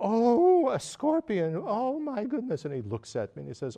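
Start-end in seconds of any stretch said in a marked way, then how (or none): 0.0-2.6 very loud, very high, drawn-out dramatic alarm. Retelling a teacher spotting a scorpion on the floor: imitating Ling Rinpoche's dramatic alarm. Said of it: "in a very dramatic way".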